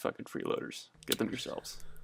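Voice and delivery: soft whispered aside.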